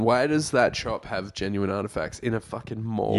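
ordinary delivery

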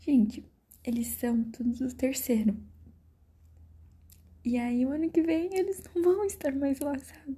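voice near tears, almost crying. Recounting crying as friends hugged, now on the verge of tears again. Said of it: "Eu já vou chorar de novo".

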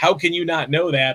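ordinary talk, nothing marked

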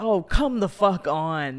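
loud screamed outburst, uncontrolled. Recalling a moment watching a film in the theater, retelling a scream. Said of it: "I literally screamed".

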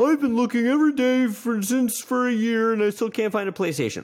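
put-on mocking whiny voice. Speaker mocks people complaining they can't find a PlayStation: mocking voice of a complainer. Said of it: "Why does he gotta have a voice like that?".

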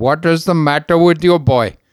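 loud, fake Indian accent. Telling a joke, voicing the doctor questioning the boy, put-on Indian accent. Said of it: "said in every Indian accent".

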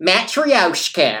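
matryoshka butchered in American pronunciation. Recounting a pronunciation button's American version of a word, imitating Google's American pronunciation. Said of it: "if I clicked the pronunciation button on American, and it was like".

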